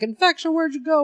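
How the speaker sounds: acted-out, high, frantic, freaked-out panicked cry. Retelling a comic scene where the monster is freaking out: imitating panicked freaking out. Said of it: "freaking out".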